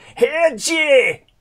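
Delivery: shrill, very high, very loud Scottish call. Retelling being called out to on a London street: Just Panda's Scottish accent. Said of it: "in this marvellous Scottish accent".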